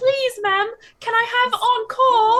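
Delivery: put-on Cockney accent. Imitating what he says after every performance, put-on cockney accent. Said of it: "He does not have a Cockney accent".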